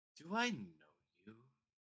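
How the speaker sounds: very condescending, superior, belittling, talking-down tone. Narrating, the speaker voices the captain walking up to Mavi, very condescending. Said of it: "in a very condescending voice".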